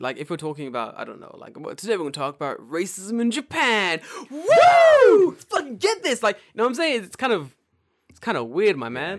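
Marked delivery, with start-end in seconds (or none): 1.8-6.2 fake over-hyped excitement, higher and louder. Mocking a hyped podcast opening on a serious topic: mock over-the-top enthusiasm. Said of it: "a little bit too enthusiastic".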